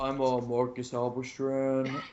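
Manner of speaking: slow, soft, smooth, silky voice. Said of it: "I could do a Halberstram voice".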